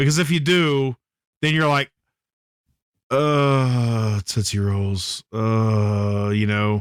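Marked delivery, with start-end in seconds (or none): 3.1-6.3 very slow, drawn-out, fake sick groan. Acting out eating too many Tootsie Rolls: mock upset-stomach groan. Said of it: "mine's more like, like, messed up stomach".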